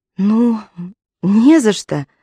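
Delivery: shy, embarrassed, bashful speech, very slow and drawn out. Narrator reading a woman answering a man who thanked her, embarrassed. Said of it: "проговорила Аманда смущенно".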